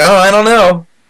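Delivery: high, unsure, shrugging tone.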